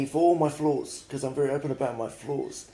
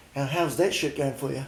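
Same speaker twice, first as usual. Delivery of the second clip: plain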